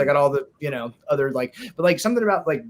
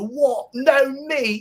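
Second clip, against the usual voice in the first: fake British accent, very high and very slow; 11 semitones higher than usual. Quoting a line from a British TV commercial: put-on British accent. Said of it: "forgive the accent".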